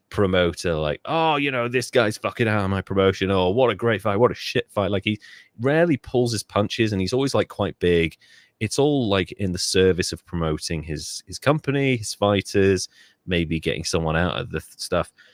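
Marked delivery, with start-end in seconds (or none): 1.0-4.9 put-on angry showman voice. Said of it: "super angry showman".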